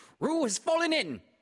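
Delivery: very high, loud calling out. Rabbit, rushing down with Christopher Robin to rescue Roo, crying out. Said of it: "cried Rabbit".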